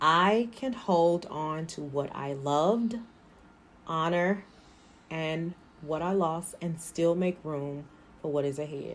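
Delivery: gentle, careful, even-toned delivery. Leading listeners through a line to repeat, slow pace. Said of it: "I'm going to say it slowly".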